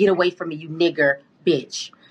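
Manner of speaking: put-on vicious snarl. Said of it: "she looked up like a demon, demonic, very evil".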